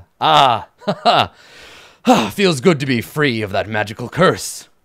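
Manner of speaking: contemptuous, haughty, scornful sneering voice. A freed figure in a yellow cloak looks down at the troll: sneering. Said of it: "he looks down at the at the troll and he sneers".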